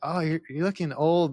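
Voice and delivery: put-on sad, sorry-sounding delivery. Retelling what a daughter said about a sent picture: imitating a sad remark. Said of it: "but she said it, like, in a sad way".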